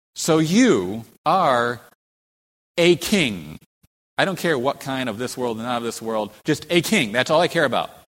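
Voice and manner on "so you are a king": very slow, scornful, mocking sarcasm, leaning on you. Speaking a ruler's words to a man called a king, mock-sarcastic, imitating full mockery. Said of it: "very sarcastic, full of mockery".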